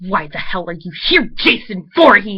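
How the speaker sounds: loud, hissed through the teeth. In a told story, she confronts Jason Voorhees crashing through the window: hissing. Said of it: "She hissed".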